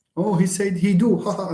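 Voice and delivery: teasing, high, mocking voice breaking into laughter. Acting out a native speaker reacting to a wrong sentence, imitating someone laughing. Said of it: "and then start laughing".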